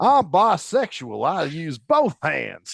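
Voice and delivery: put-on Virginia accent, drawn out and very slow. Repeating a father's joke the way he said it: imitating a father's Virginia accent. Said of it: "he was from Virginia, and he had an accent".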